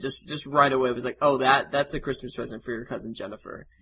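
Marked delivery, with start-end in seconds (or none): 1.2-3.6 put-on deadpan delivery. Quoting a grandma's reply about a present for cousin Jennifer, imitating her deadpan. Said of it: "just deadpan".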